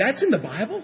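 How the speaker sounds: acted-out astonished, taken-aback, disbelieving tone. Retelling a caller's reaction after a bible passage was read, a stunned question. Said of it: "she was just stunned".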